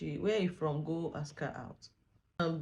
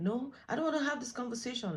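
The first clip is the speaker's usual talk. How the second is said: put-on high, screamed yelling; 8 semitones higher than usual. Retelling a quarrel where she refused to talk: imitating her screaming. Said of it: "she's screaming like".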